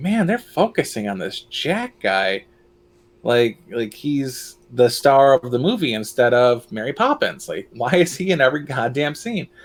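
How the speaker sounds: ordinary delivery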